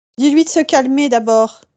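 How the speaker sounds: loud, high shouting.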